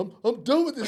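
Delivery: put-on crying, tearful voice. Retelling how a teammate walked off in tears: imitating a friend crying. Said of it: "he's up there crying".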